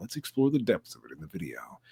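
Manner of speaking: put-on persona voice, dropped low and deep. Showing the voice done for a video narrator role: Darth Theorist voice. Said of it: "I am also the voice of Darth Theorist and the Three-Eyed Theorist, and I talk like this".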